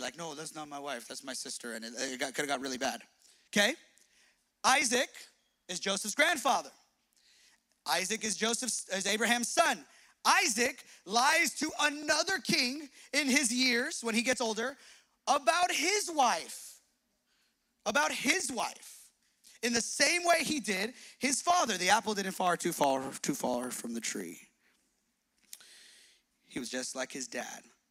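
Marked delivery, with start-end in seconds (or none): 0.2-1.7 low, soft, nonchalant voice. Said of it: "just nonchalantly, like".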